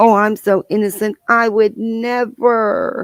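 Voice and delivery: sweet, high, slow, put-on naive voice. Mocking people who play naive: mock naive innocent voice. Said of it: "They try to play Miss Naive".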